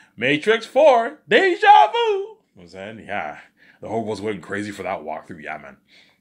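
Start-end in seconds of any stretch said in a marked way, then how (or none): 0.2-2.0 high, loud, booming, drawn-out sing-song. Doing an impression of the walkthrough guy: Rad Brad impression. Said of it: "not bad impression of Rad Brad".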